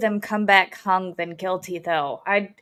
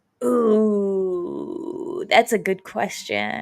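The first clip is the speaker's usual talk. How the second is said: creaky, fried-out vocal fry, musing tone. Reacting to another speaker's question about a bench trial, in vocal fry. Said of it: "I don't know why I went to vocal fry there".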